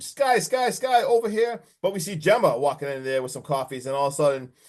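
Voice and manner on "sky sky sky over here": mock, very slow, high, stretched-out crowd calls. Retelling a film scene where a crowd recognizes someone: imitating people screaming. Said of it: "Everyone's screaming at her".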